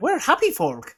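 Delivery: put-on Southern Irish accent. Explaining differences between Irish regions, the speaker demonstrates a Southern Irish accent. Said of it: "you'll do the Southern Irish".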